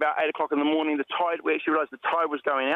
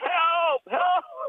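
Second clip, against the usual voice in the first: put-on, very high-pitched, desperate-sounding shouting. Retelling being stuck on a reef, calling out to people fishing: retelling shouting for help. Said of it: "I just started going".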